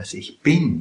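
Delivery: weight on bin, not on ich. Explaining where the emphasis falls in a quoted phrase: stress on bin. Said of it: "da ist die Betonung auf bin".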